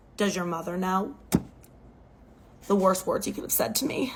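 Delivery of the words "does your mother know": very quiet, hushed, soft-spoken, barely-there voice. Retelling a parent's question after an argument: imitating someone speaking really quietly. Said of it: "gets really quiet and says".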